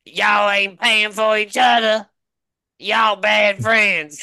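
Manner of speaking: put-on very high, very loud, shrill old-lady calling voice. Retelling what an old lady said at lunch with coworkers, imitating an old lady. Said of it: "and this old lady was like".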